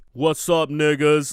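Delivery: pompous, bombastic voice. Describing how God should sound: bombastic urban God voice. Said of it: "bombastic and urban".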